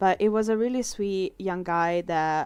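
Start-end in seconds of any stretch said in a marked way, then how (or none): none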